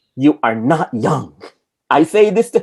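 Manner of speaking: knife-sharp, cutting voiceover delivery. Quoting a line from a voiceover, imitating how she says it. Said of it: "you have to say it the way that she says it".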